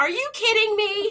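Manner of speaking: high, loud, stunned, excited disbelief. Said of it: "And we were like".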